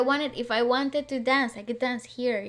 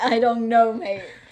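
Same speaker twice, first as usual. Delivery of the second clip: mocking, annoyed, irritated tone, louder; 5 dB louder than usual. Imitating the other speaker's reply: imitating an annoyed reply. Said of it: "Why do you sound so annoyed?".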